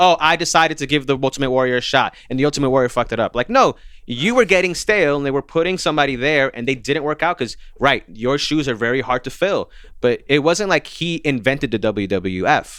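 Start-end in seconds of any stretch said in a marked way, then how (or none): none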